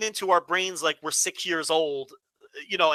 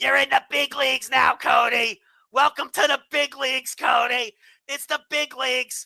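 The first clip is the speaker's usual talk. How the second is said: screeching puppet-like voice, pitched up; 8 semitones higher, 4 dB louder than usual. Imitating an irritating wrestler addressing Cody: Seth Rollins screeching in a Muppet voice. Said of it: "screeching to Cody in his fucking Muppet voice".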